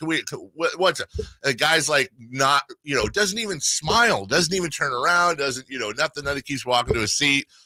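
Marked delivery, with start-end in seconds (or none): 0.0-1.1 mock, playful, jokey ribbing tone. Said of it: "I'm having fun with him".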